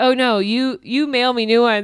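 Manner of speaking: usual speaking voice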